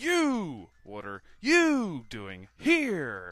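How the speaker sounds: very loud, booming, slow, drawn-out, bold and confident. Redoing the line after calling the first try the wrong tone, confident, bold tone. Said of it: "Wrong tone. It's more confidence".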